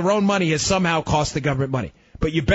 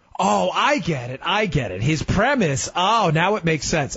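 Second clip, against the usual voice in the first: slow, sarcastic, feigned dawning understanding. Mocking a congressman's claim about borrowing from the Chinese: sarcastic feigned understanding. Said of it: "I'm being sarcastic here".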